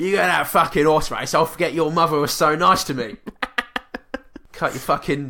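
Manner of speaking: convincing put-on Cockney accent. Acting out a dad character in a scene, convincing cockney dad accent. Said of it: "convincing Cockney dad accent".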